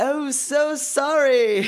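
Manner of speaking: put-on bright English accent. Retell an actor's apology after you almost got hit with an ice cream cone, in Tim Curry's English accent. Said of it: "in his English accent".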